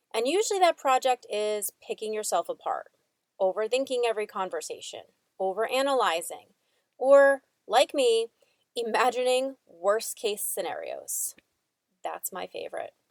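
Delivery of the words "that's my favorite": very heavy, dripping sarcasm, said as an aside. Commenting on imagining worst case scenarios: sarcastic. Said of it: "very sarcastically".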